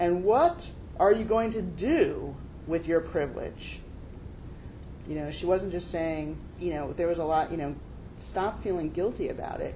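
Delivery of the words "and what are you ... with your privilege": imposing, booming, slow delivery. Retelling what an imposing woman said to the speaker's group; booming voice. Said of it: "boomed out".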